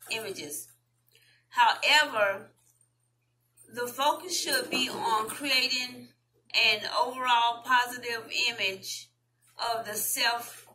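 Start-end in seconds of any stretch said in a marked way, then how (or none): none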